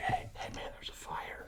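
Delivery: soft, hushed, barely voiced whisper. Retelling a story where somebody comes over, whispering. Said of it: "somebody comes over and whispers".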